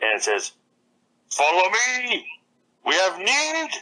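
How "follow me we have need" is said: put-on old bard voice, pitched high, slow. Voicing a mimic bird: old blind bard voice. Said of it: "The bird has the voice of the old blind bard".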